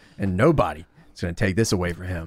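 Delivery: grave, very low, dead serious delivery. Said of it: "he gets real fucking serious".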